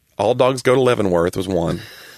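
ordinary talk

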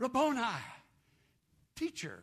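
loud, glad, full-voiced joyous cry. Retelling a Bible story, the speaker voices a woman answering Jesus, acting out a loud joyous cry. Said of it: "with a loud, joyous voice".

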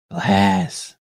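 whispering. Voicing a character who tells another he has found glass: whisper. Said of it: "and he whispers".

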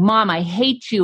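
usual speaking voice

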